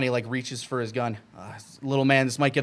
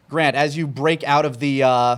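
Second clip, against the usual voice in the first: normal talking voice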